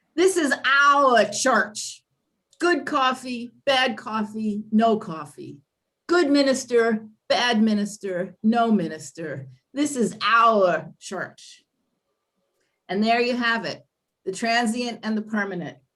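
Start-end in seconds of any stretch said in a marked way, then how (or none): 0.2-11.6 emphatic, cranky New England drawl, rough put-on. Quoting a curmudgeonly congregant at a heated congregational meeting, attempted New England accent. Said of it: "said in a New England accent that I can't really reproduce".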